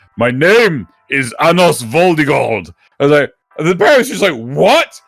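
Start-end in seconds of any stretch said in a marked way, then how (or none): 0.2-2.7 deepest possible voice, much slower pace. Retelling a newborn baby talking back to his parents, Anos Voldigord in deepest voice. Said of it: "in the deepest voice possible".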